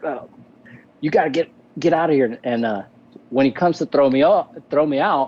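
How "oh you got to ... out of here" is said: irritated, annoyed, kind of mad tone. Retelling how a stage manager ordered him off the stage: imitating someone kind of mad. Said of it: "kind of mad".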